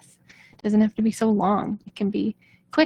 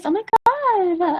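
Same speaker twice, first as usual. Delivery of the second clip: very high girly put-on voice, god drawn out; 10 semitones higher than usual. Listing the many voices one person can use: girly voice. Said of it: "I have a girly voice".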